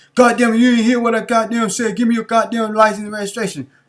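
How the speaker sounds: agitated, harsh voice. Describing a traffic stop, playing the officer who pulled the driver over; imitating an agitated cop. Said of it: "When you hear that tone of voice".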